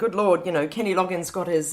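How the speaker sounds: ordinary delivery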